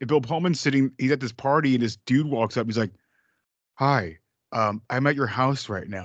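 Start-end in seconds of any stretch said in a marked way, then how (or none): 3.8-6.0 acted, slow, intense, dead-serious delivery. Retelling a movie scene where a stranger approaches someone: imitating an intense stranger. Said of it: "Look at all intensity".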